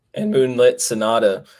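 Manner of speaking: loud voice cracking and breaking on one word. Previewing a horse race with a co-host, voice cracking. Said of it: "excuse me for the voice crack".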